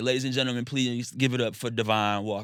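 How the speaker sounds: ordinary delivery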